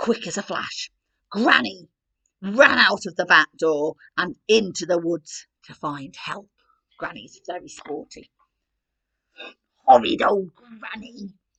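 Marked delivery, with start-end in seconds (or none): 9.9-11.3 storybook wolf voice, growling. Reading a Little Red story aloud, voicing the wolf in a growling wolf voice. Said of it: "the wolf growled".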